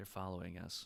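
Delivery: hushed, half-whispered voice. Voicing a character warning the party that they are being followed: half-whispering. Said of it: "Joni kinda whispers to you".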